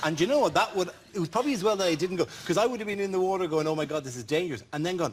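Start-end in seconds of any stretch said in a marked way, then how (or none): none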